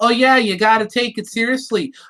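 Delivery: put-on Minnesota accent. Describing the residents of a Minnesota town, quoting them in a Minnesotan accent. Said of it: "the Minnesotan accent is a joke".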